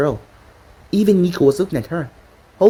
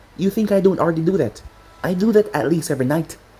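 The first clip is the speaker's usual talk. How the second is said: ordinary delivery, nothing marked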